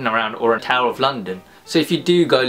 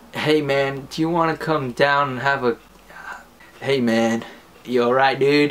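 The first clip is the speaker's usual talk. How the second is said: exaggerated, harsh American accent. Explaining how british people imitate americans, doing an exaggerated american accent. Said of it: "if a British person does an accent of an American person".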